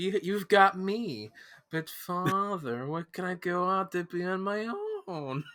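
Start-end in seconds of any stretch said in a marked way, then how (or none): 1.7-5.4 spot-on put-on movie trailer announcer voice. Quoting a movie trailer line back to the other speaker: Pauly Shore impression. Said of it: "spot on impression of it".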